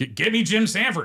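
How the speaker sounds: boisterous, very high, drawn-out voice. Retelling a phone call to dispatch: imitating Rick Evans being boisterous. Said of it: "he's very boisterous on the phone".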